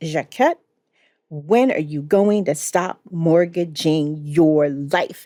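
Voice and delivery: mock emphatic delivery. Retelling what a man said at the end of a meeting, mimicking his emphasis. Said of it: "I am mimicking that emphasis".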